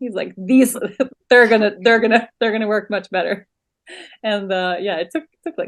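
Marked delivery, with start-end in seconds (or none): 0.4-3.5 mock wry, teasing, sarcastic jokey bragging tone. Retelling the husband's jokes during a quiet ceremony: imitating husband's sarcastic joking. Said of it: "he starts making jokes".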